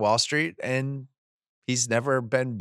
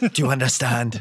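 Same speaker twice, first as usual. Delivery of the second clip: put-on odd, menacing, threatening English accent. Quoting a movie line to co-hosts, in a weird English accent. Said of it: "It's like this weird English accent".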